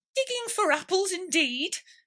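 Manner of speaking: cross, high-pitched retort. Narrator reading a story, voicing the rabbit answering Pat, angry. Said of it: "said the rabbit angrily".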